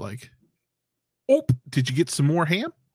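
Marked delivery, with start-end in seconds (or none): 1.3-2.7 put-on Northern accent. Imitating a coach switching his accent back north: Brian Kelly's Northern accent. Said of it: "changed his accent back to the Northwest".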